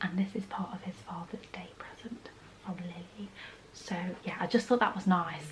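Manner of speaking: hushed, very quiet whispered aside. A speaker showing purchases whispers because their husband has come back in. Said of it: "I'm whispering because my husband's come back in".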